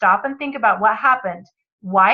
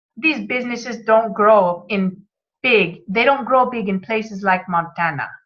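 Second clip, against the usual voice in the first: roughly done, bad put-on Cuban accent in English. Retelling what a man said, the speaker uses a Cuban accent. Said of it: "in a Cuban accent".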